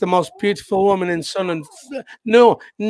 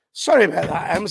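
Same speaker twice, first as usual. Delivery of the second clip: usual speaking voice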